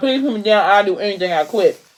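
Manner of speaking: ordinary delivery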